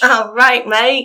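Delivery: really broad, strong Australian accent. A podcast host reads out poll results, then answers in an Australian accent. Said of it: "I think that was really Australian".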